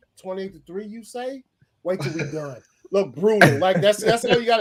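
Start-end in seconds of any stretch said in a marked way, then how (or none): 0.2-2.6 mocking, ridiculing voice played for laughs. Retelling a scene as if spoken by Matt Ryan: imitating Matt Ryan. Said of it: "that's exactly what Matt Ryan's like".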